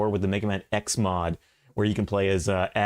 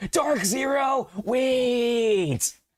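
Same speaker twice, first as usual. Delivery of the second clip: growing excitement, very high excited shout. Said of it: "Oh, I'm getting excited now".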